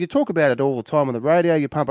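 plain

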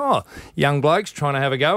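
ordinary talk

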